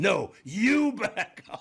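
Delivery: acted shrill, slow, very high, stretched-out screaming. Telling about a man arguing on a plane, imitating him screaming. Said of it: "He started screaming".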